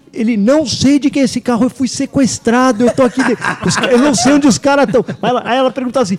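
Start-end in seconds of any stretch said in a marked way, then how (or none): 0.3-5.0 loud, forceful shouting. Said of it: "Uma gritaria e um".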